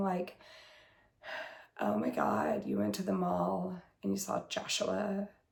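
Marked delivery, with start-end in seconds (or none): 1.8-5.3 put-on bored, apathetic teen voice, utterly uninterested. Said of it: "make it sound like she doesn't care about anything".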